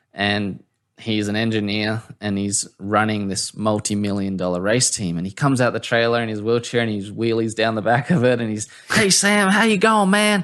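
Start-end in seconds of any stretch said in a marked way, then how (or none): 8.9-10.5 put-on friendly, very high southern accent. Recalling a race team engineer greeting Sam, in a southern accent. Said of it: "southern accent".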